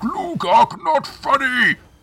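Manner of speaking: ogre voice bellowing. The narrator voices a laughed-at ogre raising his weapons, bellowing as Glugark. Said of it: "he bellows".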